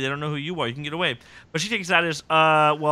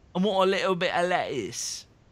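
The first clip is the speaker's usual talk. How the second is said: rough put-on Cockney accent; 3 semitones higher than usual. Retelling a story's plot, quoting a line in a Cockney accent. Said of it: "That's like more of like a Cockney accent".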